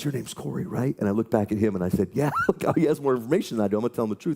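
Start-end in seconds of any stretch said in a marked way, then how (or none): 0.0-1.0 put-on whisper, quieter. Retelling what a stranger said to him in a bathroom, whispering. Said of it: "And he's whispering".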